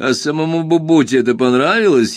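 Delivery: sly, snide, needling and sarcastic delivery. The narrator answers his friend's excited story with a question, snidely. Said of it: "ехидно осведомился я".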